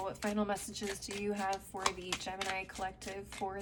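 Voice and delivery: ordinary talk, nothing marked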